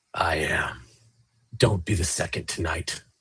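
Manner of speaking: very low, raspy metallic voice. Asked whether it is responsible for the body, the hooded creature replies, raspy metallic voice. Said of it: "that real raspy metallic voice".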